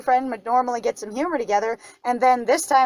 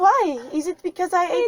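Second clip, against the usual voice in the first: beautiful put-on French accent, pitched up; 6 semitones higher than usual. Retelling a scene where a boyfriend answers his angry partner, in a french accent. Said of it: "this beautiful French accent".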